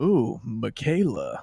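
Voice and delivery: low, strange, almost seductive tone. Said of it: "this weird, almost sexy tone".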